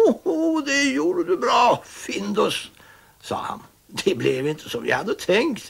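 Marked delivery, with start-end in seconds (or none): 0.0-2.7 very high, slow speech, laughing through words. Pettson sits in the kitchen and speaks to Findus, laughing.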